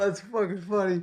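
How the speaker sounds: laughing while talking. Cracking up at a joke another speaker just made: laughing while talking. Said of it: "I'm crying right now".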